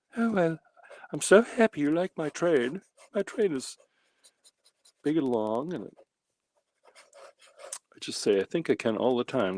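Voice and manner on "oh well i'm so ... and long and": high put-on falsetto held throughout. Voicing a big burly freight train driver in a high falsetto voice. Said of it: "speaks with a falsetto voice".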